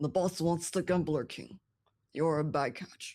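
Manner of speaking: monster creature voice. Narrating a game scene, voicing the creature's reply in a creature voice. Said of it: "you hear the creature replies".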